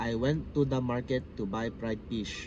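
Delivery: slight, mild Filipino accent. Showing someone how the speaker's own accent sounds, slight filipino accent. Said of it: "I can show you how it's. I have a slight accent too".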